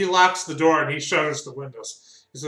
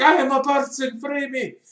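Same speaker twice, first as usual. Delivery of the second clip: put-on very high-pitched screaming doll voice; 11 semitones higher than usual. Voicing rowdy dolls demanding to be freed: screaming dolls. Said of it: "Start screaming about how I'm a person".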